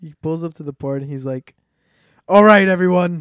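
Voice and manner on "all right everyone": put-on shouting voice, higher and louder. Retelling a movie line, shouting as Mister Freeze. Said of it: "he's in all caps".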